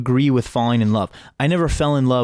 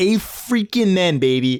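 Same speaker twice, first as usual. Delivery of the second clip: higher, casual Midwestern guy voice; 6 semitones higher than usual. Speaker repeats a catchphrase, then asks who they were mimicking; imitating Micaiah. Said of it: "who was I mimicking?".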